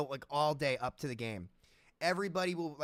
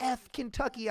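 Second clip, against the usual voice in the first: high-pitched, mocking put-on scream; 9 semitones higher than usual. Retelling how a rival fan at a game insulted them: imitating a girl screaming. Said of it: "some girl started screaming".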